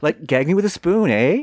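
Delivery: put-on high valley girl voice, Canadian eh. Showing off a canadian valley girl character: canadian valley girl voice. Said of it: "My Canadian Valley girl".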